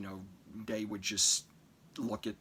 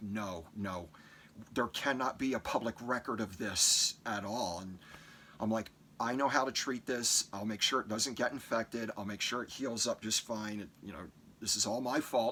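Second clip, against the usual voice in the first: ordinary talk, nothing marked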